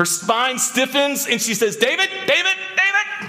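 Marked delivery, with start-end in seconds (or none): 1.8-3.3 alarmed, very high, repeated calling. Speaker acts out what she says when her spine stiffens, imitating her calling out. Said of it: "Is that a pretty good impersonation?".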